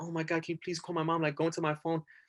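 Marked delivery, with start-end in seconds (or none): 0.0-1.2 mock anxious, nervous pleading delivery. Retelling being held after arrest, asking the cop to call mom: retelling own nervous plea. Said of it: "so nervous".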